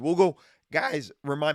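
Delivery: voice cracking mid-phrase on remind. Talking to listeners mid-sentence, the speaker's voice cracking. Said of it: "wow, my voice cracked".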